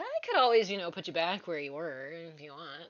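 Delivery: spiteful, mischievous, impish taunting, swooping voice. Storyteller voices a female figure offering to put the listener back: mean, impish voice. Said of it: "kind of in a mean, impish voice".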